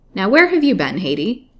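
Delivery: loud, openly suspicious voice. A doctor comes in right after an old woman returning home; suspicious question. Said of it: "he asked suspiciously".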